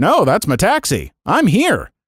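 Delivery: mock sarcastic, swooping reply. Reading a story aloud, retelling a sarcastic reply to a staff member: retelling a sarcastic reply. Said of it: "I sarcastically said".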